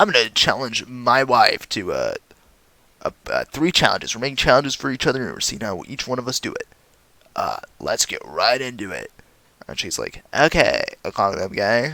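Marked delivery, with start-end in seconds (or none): 10.3-11.9 put-on slow, drawn-out bro chick voice. Retelling the wife's reply about a challenge, in the speaker's bro chick voice. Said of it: "That's my bro chick voice".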